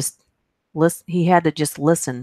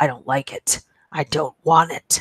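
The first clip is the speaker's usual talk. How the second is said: malevolent, creepy, sinister voice. Reading a story of a voice heard on the baby monitor at night, evil voice. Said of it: "I heard an absolutely evil voice".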